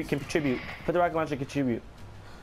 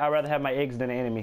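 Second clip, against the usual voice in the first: ordinary talk, nothing marked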